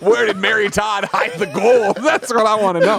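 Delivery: silly, goofy, high felt-puppet voice. Playing along in a bit about talking to Abraham Lincoln, Muppet voice. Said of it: "Why did you turn into a Muppet there?".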